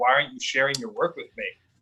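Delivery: mock-pained, hurt-sounding voice. Retelling what he said to the speaker, imitating a pained voice. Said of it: "I could just hear the pain in his voice".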